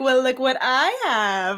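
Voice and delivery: theatrical, slow, showy gloating delivery.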